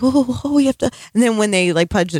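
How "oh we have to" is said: put-on frightened, reluctant voice, pitched up. Retelling how the kids answered when asked to swear fealty, imitating scared reluctance. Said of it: "they're like so scared and they're like".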